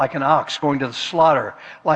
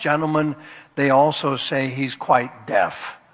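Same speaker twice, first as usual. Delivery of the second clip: ordinary delivery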